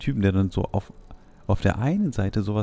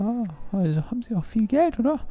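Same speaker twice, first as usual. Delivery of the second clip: very high gold-digger woman's voice; 13 semitones higher than usual. In a role-play, Vanessa asks the worker about money, gold-digger voice. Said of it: "Vanessa [name] ist richtige Golddiggerin".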